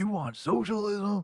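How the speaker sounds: angry, needling tone. Retelling how a man reacted after hearing who the speaker likes: imitating someone pissed off. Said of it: "he got so pissed".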